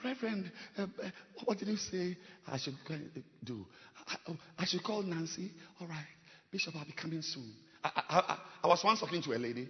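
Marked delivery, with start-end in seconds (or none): 0.0-7.5 mock soft, gentle voice, quieter. A speaker acts out someone addressing their pastor, in a mock soft, gentle voice. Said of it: "with a soft voice and with a gentle voice".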